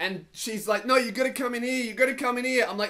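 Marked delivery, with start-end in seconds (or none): 0.8-2.6 put-on pushy, insistent tone, high-pitched. Retelling a woman pulling on the arm: imitating an insistent woman. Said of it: "she's really insistent".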